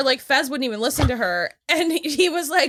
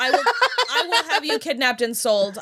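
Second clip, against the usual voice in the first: ordinary talk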